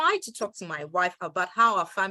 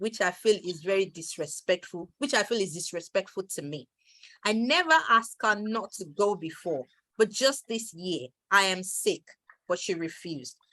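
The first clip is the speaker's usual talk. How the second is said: ordinary talk, nothing marked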